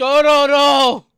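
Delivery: put-on shouting. Acting out a character screaming a name at passersby: imitating a scream. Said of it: "just screams at random passerbys".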